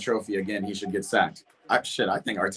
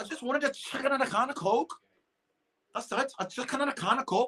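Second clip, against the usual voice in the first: very high, soft put-on Scouse accent; 5 dB quieter than usual. Asked again to do Moscow's accent, the speaker imitates Moscow's Scouse accent. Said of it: "I'm getting real good at Scouse".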